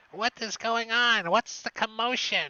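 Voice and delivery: high-pitched, loud witch voice. Voicing another witch heard behind an opening door: voicing another witch. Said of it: "and another voice".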